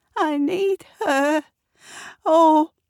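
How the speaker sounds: wavering, trembling voice. Narrator reads the drooping Eric's line, in a quavering voice. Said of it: "says Eric with a quavering voice".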